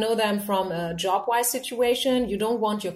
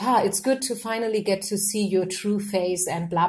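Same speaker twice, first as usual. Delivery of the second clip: ordinary talk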